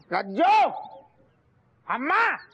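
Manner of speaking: loud shouting. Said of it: "काहे इतना चिल्ला रहे हो?".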